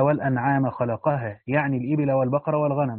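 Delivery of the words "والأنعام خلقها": ordinary delivery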